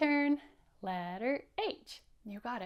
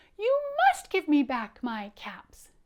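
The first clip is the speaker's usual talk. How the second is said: loud, furious, swooping, really angry; 3 semitones higher, 7 dB louder than usual. Reading a story aloud, say the man's line to the monkeys: really angry. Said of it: "Can you do it like you're really, really angry".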